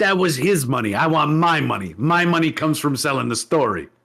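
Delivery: put-on New York accent. Retelling his mother's reply about the money: imitating Mom in a New York accent. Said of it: "I'm doing the wrong accent".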